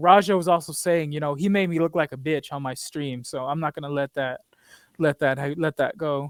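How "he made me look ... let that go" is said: plain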